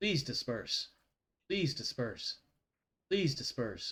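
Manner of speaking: hushed, even, automated computer voice. Game master voicing Mother over the airlock loudspeaker, Mother's automated computer voice. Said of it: "in her automated computer female voice".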